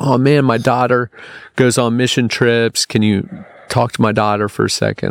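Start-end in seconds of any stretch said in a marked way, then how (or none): none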